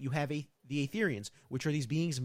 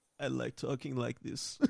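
put-on rough, creaky old-man voice; 3 semitones lower, 4 dB quieter than usual. Acting out what j b says about his plan: old guy voice. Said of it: "Why you sound like an old guy?".

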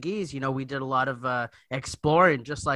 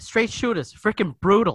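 loud, blunt, no-nonsense Boston delivery, barked out; 7 semitones higher, 6 dB louder than usual. Talking about straight shooters from Boston, doing a Bill Burr impression. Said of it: "we have Bill Burr over here".

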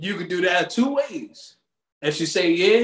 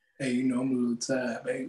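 put-on deep nighttime voice, lower and quieter; 6 semitones lower, 9 dB quieter than usual. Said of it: "Your voice just get deeper in the nighttime".

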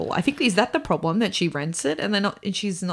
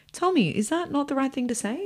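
put-on sincere, heartfelt, earnest, pitched-up tone; 7 semitones higher than usual. Retell what she says to him in the episode, imitating someone speaking so earnestly. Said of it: "says to him so earnestly".

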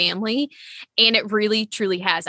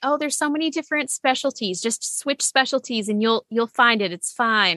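mild, almost sarcastic put-on delivery; 3 semitones higher than usual. Retelling what people always say about switching specialties: sarcastic imitation of advice. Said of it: "I say that almost sarcastically".

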